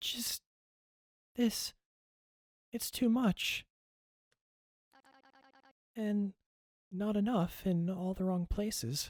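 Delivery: high-pitched put-on woman's voice, best attempt. Asked to do his best woman impression in a scene, put-on woman's voice. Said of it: "do your best woman impression".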